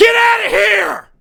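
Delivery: very high, harsh, rough screaming shriek. Retelling how another person reacts to a caller: imitating someone screaming. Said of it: "screams at him".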